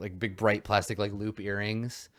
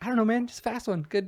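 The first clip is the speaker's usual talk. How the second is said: high, clueless-sounding voice. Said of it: "And they're like".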